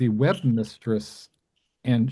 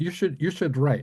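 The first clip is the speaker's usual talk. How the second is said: thick, exaggerated German accent; 4 semitones higher than usual. Retelling what a guest asked a struggling caterer: Billy Wilder thick German accent. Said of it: "a thick German accent".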